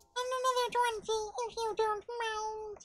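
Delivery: high squeaky puppet voice. In a role-play scene, a player speaks in an Elmo voice. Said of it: "at this Elmo voice".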